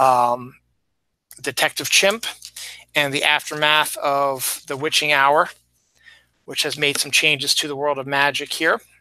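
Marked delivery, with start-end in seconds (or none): none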